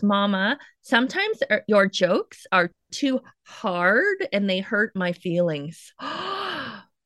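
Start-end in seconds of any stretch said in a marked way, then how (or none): none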